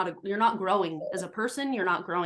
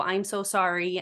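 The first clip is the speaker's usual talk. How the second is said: mock-tearful kid voice, put-on sobbing. Describing how a sensitive kid reacts to a firm voice, imitating a crying child. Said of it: "and they're like on the floor in tears".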